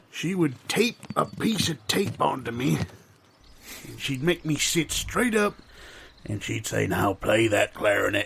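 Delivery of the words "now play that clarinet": very low, deep, put-on grandmother voice. Remembering Grandma's clarinet lessons, imitating Grandma's deep voice. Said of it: "She had a deep voice".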